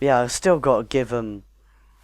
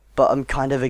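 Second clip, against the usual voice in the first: plain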